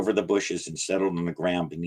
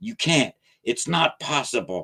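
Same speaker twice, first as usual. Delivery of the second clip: high-pitched, hissing, hissed through the teeth; 6 semitones higher than usual. A creature being dragged toward the water protests to the narrator, hissing. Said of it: "it hissed".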